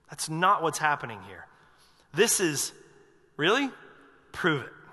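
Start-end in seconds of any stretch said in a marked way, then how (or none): 3.4-4.7 skeptical, doubtful, unconvinced, disbelieving tone. A speaker acting out a man's doubting reply to the angel, mock disbelief. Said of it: "This is doubt. It's disbelief".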